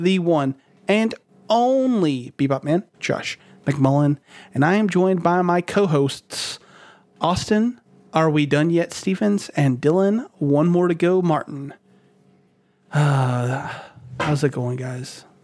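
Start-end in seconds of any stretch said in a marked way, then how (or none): 9.5-15.2 slow, downcast, deflated and sad. Host introducing his co-hosts as the year nears its end, sounding sad. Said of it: "Why'd you sound sad at the end?".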